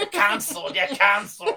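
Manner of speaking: put-on Scottish accent. Prompted to say it as the Scottish guy, the speaker repeats it in a mock Scottish accent. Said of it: "I'm so good with my accents".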